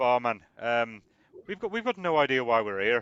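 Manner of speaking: put-on drifting into a hesitant Irish accent. Speaking in character to the barman: Irish accent. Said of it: "why have I gone Irish?".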